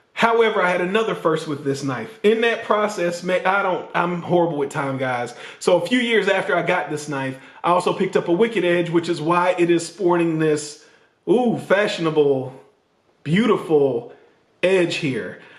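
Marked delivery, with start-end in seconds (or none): 11.2-15.3 dripping, total sarcasm with fake admiring tone. Showing the edge on a knife he sharpened: sarcastic fake praise. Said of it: "that's total sarcasm".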